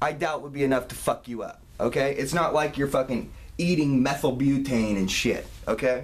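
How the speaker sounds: plain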